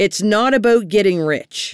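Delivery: ordinary delivery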